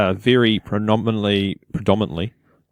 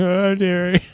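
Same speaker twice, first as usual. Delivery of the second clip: mock yell, high-pitched, projected as if across a room. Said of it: "some dude yelling".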